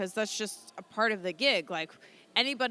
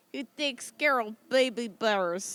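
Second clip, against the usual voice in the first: put-on Russian accent. Joking about a guest's love for baby bears: put-on Russian accent. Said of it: "go back to the Russian accent".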